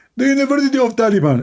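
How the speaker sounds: very high-pitched put-on voice. Answering where a degree is from: Zakir Naik impression. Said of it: "Zakir Naik, where is that?".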